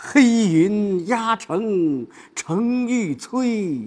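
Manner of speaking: 黑云压城城欲摧 read wrongly, slow, high and drawn out.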